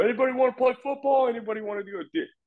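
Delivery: quick, high-pitched yell.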